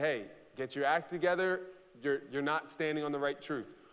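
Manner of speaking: ordinary delivery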